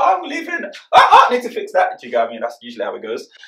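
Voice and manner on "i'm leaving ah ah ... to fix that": much higher, louder startled yelp. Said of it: "It's like, I'm just gonna walk".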